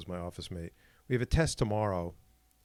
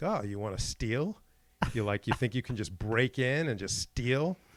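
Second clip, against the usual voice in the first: put-on confrontational tone; 3 semitones higher than usual. Retelling confronting a nervous student before a test: imitating own confrontational tone. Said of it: "confronted this kid".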